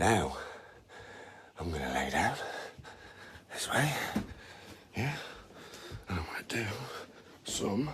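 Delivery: out of breath, panting. Talking through an exercise routine: out of breath while talking. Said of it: "how out of breath he is".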